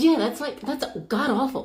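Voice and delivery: put-on, thoroughly disgusted and repulsed. Retelling what a man said about women's hair: imitating a disgusted tone. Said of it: "he's sounding so disgusted by this".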